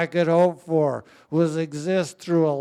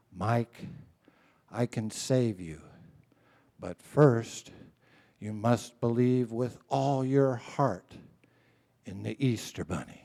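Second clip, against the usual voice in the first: imitated whisper, lower and quieter; 4 semitones lower, 7 dB quieter than usual. Retelling what the trauma surgeon said into his ear: imitating a whisper. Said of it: "leans over and whispers in my ear".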